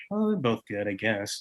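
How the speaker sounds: acted, very soft, slow, dismissive condescending drawl. Arguing about tortillas, the speaker mocks the listener's condescending tone. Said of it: "your very condescending tone that was like".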